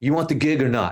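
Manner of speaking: thick, heavy, put-on Chicago accent. Retelling how a man answered a request to pay for a flight, in a thick Chicago accent. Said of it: "he's got this thick, thick Chicago accent".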